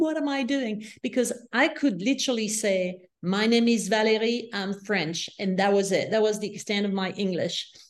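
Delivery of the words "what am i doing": weeping, tearful voice, crying through the words. Recalling the train leaving the station, retelling her past self crying. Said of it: "crying, going like".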